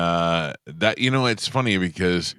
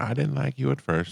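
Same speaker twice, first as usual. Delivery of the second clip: put-on elderly southern voice, higher and quieter; 7 semitones higher, 4 dB quieter than usual. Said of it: "I hear her going".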